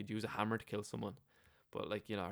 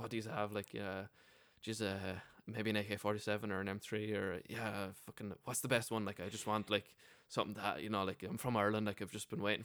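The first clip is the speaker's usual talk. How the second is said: ordinary talk, nothing marked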